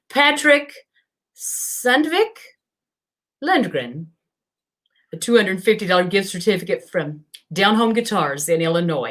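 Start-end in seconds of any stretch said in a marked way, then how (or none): 0.1-4.0 attempted mountain Swedish accent, higher. Reading out a raffle winner's name from Sweden: put-on mountain Swedish accent. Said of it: "my best mountain Swedish".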